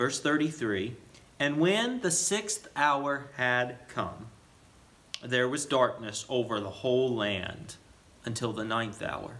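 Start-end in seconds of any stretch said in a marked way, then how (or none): 1.4-9.4 careful, meditative reading aloud, each word weighed. Reading a bible verse aloud to show the pace, slow meditative reading. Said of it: "let me just show you the pace at which we want to read".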